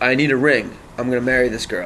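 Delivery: ordinary delivery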